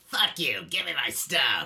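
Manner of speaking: loud rasping voice like a chain-smoker. Acting out a rude person demanding a product during online work, as a Karen with a smoker voice. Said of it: "It's always a Karen with a smoker voice".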